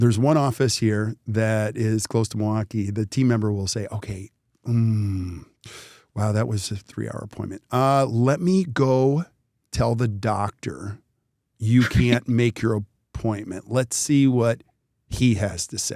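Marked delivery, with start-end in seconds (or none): 3.9-16.0 very slow, deliberate, drawn-out, stretched hesitation. Speaker acting out what a team member tells a patient who wants to cancel, very slowly. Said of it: "they say it very slowly".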